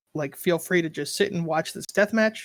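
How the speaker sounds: usual speaking voice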